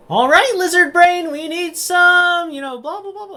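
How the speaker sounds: high loud character yell. Game master voicing Jaynny calling an order back into the tavern kitchen: yelling to the kitchen. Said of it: "kind of yell back into the kitchen".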